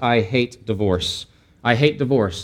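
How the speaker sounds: very stern, slow delivery. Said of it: "God very sternly says".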